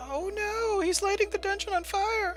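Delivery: awful, very high, bad falsetto. During a game, a player voices Princess Corey: awful Princess Corey voice. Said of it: "That was a really awful Princess Corey voice".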